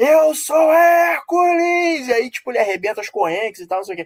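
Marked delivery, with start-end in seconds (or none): 0.0-2.1 very high, all-out roaring shout. Retelling a scene where a man is asked who he is: imitating The Rock shouting. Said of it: "ele responde gritando com a cara toda inchada".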